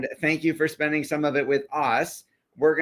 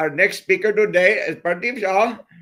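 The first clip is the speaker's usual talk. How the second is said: put-on Indian accent, higher and louder; 4 semitones higher, 4 dB louder than usual. Rereading the speaker's intro line when asked to: Indian accent. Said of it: "read it again with an Indian accent".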